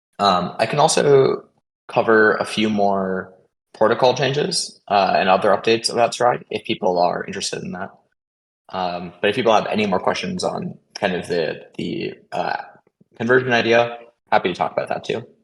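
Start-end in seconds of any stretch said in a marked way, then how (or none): 0.2-4.8 slow, deliberate word-by-word speech. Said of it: "I'll talk a little bit slower".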